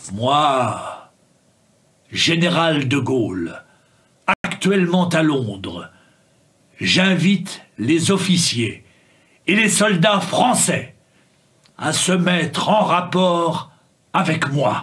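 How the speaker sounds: put-on rhythm of a formal old speech. Listening to a recording and repeating it right away; imitating De Gaulle's rhythm. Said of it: "j'écoute et j'essaie de reproduire aussitôt".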